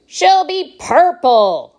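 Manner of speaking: loud, high-pitched crying out. Reading a character's answer to another character's question, cried out. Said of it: "cried Mr. Wonka".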